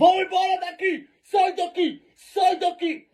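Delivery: play-acted man's yelling, high and drawn out. Retelling how a bearded man yelled at them to leave: imitating a man yelling. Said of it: "tinha um homem barbudo gritando".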